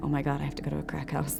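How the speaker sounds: acted panicked voice. Retelling own reaction to going for more drugs: retelling own panic. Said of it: "a panic attack about this".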